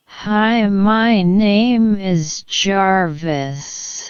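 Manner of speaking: drawn-out, very slow delivery. Demonstrating an AI voice with its speed value set very low: very slow speech. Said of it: "then the A I will speak very very slowly".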